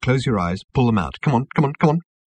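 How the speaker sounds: ordinary delivery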